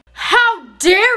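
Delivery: very loud, furious, outraged yell. Adult scolding a student over her dyed hair, shouting. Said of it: "I can hear you guys from down the hall".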